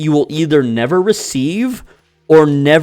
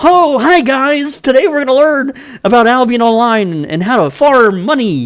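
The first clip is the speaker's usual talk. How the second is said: put-on gushing host cheer, high, fake-bright enthusiasm; 9 semitones higher than usual. Speaker mimics someone's video intro, imitating fake enthusiasm. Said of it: "you like how you have that fake enthusiasm".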